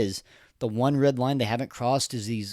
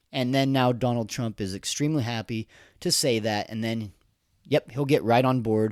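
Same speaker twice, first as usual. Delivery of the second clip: ordinary talk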